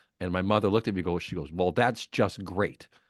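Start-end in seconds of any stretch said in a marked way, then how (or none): 1.5-2.9 sarcastic, mocking tone meaning the opposite. Retelling a childhood memory of spilled milk and the mother's reply: imitating mother's sarcastic tone. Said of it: "that tone is not good".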